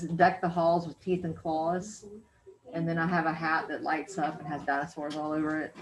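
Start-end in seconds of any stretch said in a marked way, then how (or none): none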